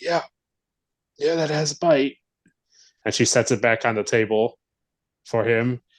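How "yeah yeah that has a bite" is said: raspy, pitched-up voice after a little cough. Retelling a scene with Klingons, doing a woman's line in a raspier voice. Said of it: "she says in a more raspier voice".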